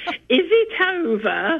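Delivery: put-on very strange northern English accent, sing-song and high. Speaker recalls coming round from anaesthetic, in a very strange northern accent. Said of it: "in this very strange northern accent".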